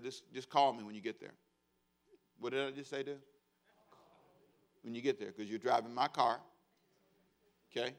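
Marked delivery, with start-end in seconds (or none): none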